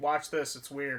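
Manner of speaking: normal talking voice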